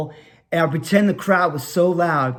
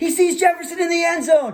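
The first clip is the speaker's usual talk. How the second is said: very high play-by-play sports announcer call; 12 semitones higher than usual. Recalling throwing the ball to his brother, calling the play: imitating a sports announcer. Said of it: "I would turn into the announcer again".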